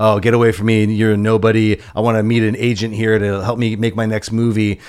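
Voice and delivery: ordinary talk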